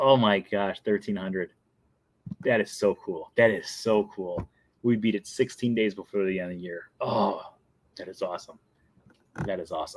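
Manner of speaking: quiet, emotional delivery.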